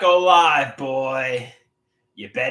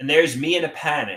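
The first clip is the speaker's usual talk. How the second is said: normal talking voice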